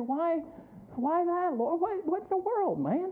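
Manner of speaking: high, plaintive, aggrieved whining. Retelling complaining to the Lord about someone else: imitating whining. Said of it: "I start whining like the guy back in the Psalms".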